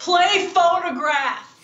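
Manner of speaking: put-on rowdy, drunken shouted delivery. Describing the men behind the speaker at an event: retelling drunk guys screaming. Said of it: "drunk Bronx dudes who kept screaming".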